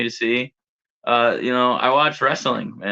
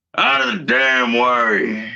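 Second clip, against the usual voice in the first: put-on grumbling outlaw voice; 3 dB louder than usual. Trying a Red Dead Redemption impression after John Marston: grumbling Arthur impression. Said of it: "He just grumbles everything".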